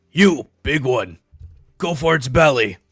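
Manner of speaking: shouting out. In a tabletop game, the player's character yells to a companion, yelling. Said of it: "And I'm just gonna yell".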